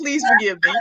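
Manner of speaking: play-acted humble, earnest begging plea. Retelling an early-morning prayer on the porch, hands raised: retelling own pleading prayer. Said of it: "that hand is up, and I'm like".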